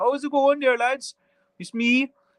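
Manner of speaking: poor Kerry accent. Asked about talking like the sticks, offering to sound like a Kerry man, terrible Kerry accent. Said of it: "I can talk more like a, a Kerry man if you want".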